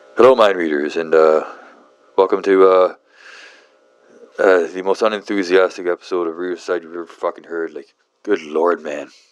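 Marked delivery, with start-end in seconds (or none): none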